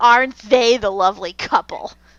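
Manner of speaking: play-acted, hate-filled delivery. Retelling a villain's line about the couple: imitating a hateful voice. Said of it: "this such hatred in his voice".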